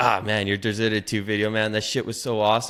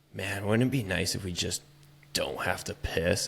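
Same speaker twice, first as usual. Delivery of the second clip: mock-drunk man's whisper, quieter; 3 semitones lower, 7 dB quieter than usual. Retelling a drunk stranger leaning over in a stadium bathroom, imitating a drunk whisper. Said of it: "he's whispering over my shoulder".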